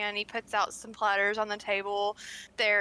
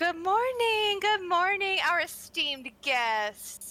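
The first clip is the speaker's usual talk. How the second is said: high, swooping, sing-song calling out; 8 semitones higher, 3 dB louder than usual. Narrating the scene, voice Mary greeting guests coming down for breakfast: Mary character voice calling out. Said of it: "and [name] and [name] are sitting at the table having their morning tea and discussing the success of the evening. / [name] calls to you as you're coming down and come join us for breakfast. / and [na".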